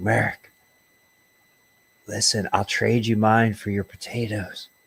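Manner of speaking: whispered speech. In a role-play scene, a player whispers over at merrick: whisper. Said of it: "I'm whispering over at Merrick".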